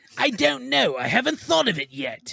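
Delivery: very slow, drawn-out, high, swooping, swinging drawl. Quoting a line from an episode in the Joker's voice: Mark Hamill Joker voice. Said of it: "Thank you, Mark Hamill".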